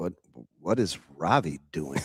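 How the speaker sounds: mock flat, straight-faced deadpan, low pitch. Retelling what someone said when a call went to voicemail: imitating a deadpan line. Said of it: "he just deadpan, straight face".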